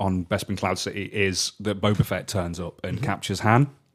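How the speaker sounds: usual speaking voice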